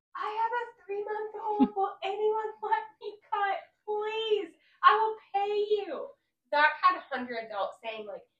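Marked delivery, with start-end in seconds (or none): 0.2-6.1 very high, shrill, loud, stressed scream. Retelling begging people in a long airport line: retelling own screamed plea. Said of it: "So I am going screaming to people".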